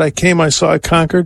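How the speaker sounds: ordinary delivery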